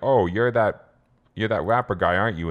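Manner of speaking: put-on patronizing voice. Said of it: "seems really patronizing".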